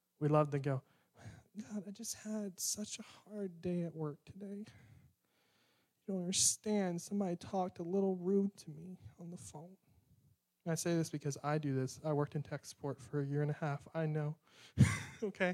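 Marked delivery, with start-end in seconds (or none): 1.6-9.8 softer, whiny complaining tone. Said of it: "we love to whine and complain to God".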